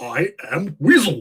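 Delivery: cartoon character voice. Showing another speaker the cartoon's title line: I Am Weasel voice. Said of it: "Here's his voice. He goes".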